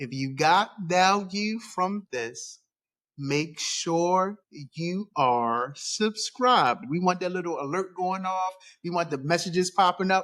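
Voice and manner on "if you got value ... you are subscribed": very slow, deliberate, word by word. Host telling listeners to subscribe, very slow. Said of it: "I like to say this very slowly".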